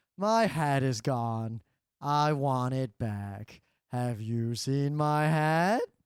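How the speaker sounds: very low, deep storybook bear voice. Recommending a children's book, the speaker reads the bear's lines in a bear voice. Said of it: "you have to read it the bear's voice".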